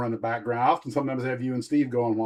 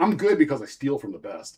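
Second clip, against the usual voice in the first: ordinary talk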